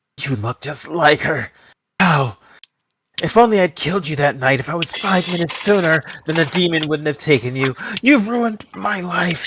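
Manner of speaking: high, furious snarl, full of rage. A stabbed man looks into your face and speaks, angry snarl. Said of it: "He's really angry as he snarls".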